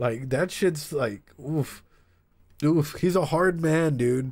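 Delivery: tearful, choked-up voice catching, on the verge of tears. Talking about a hard man who worked his entire life, tearing up. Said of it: "right now I'm tearing up".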